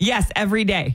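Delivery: acted-out, very proud tone. Retelling a woman answering a nurse's question about smoking, mock-proud. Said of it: "she said it so proud".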